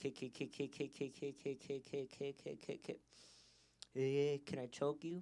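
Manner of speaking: very slow stutter stuck on the K sound. Acting out asking a partner for consent, imitating own stutter. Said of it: "with a stutter".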